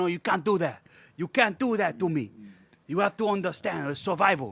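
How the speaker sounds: put-on over-the-top, heavily overdone Mexican accent. Retelling a movie scene, imitating Douglas with an overly Mexican accent. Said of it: "I'm giving him an overly ... overly Mexican".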